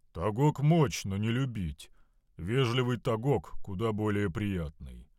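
usual speaking voice

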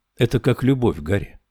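ordinary delivery

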